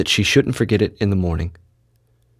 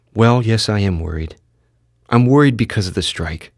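ordinary delivery, nothing marked

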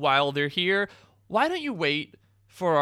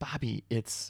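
hushed whisper, much quieter; 5 semitones lower, 9 dB quieter than usual. After the guest has left the show, the speaker turns to bobby, whispering. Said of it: "I don't know why I'm whispering".

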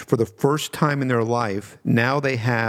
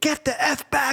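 very high, stretched-out, drawn-out scream; 14 semitones higher than usual. Speaker retells a cop yelling after they stepped into the street: retelling a cop's scream. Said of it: "cop just starts screaming".

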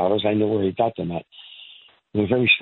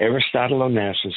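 ordinary delivery

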